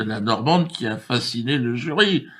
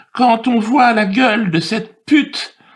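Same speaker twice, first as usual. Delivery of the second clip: carried away in anger, losing their temper; 11 semitones higher, 8 dB louder than usual. Contesting a procedure and its results, getting carried away in anger. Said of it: "je me suis emporté".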